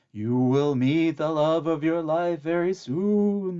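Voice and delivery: spooky, very slow ghostly intoning, loud and high. A magic mirror speaks to Lena as she dresses, in a spooky voice. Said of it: "the mirror said in a spooky voice".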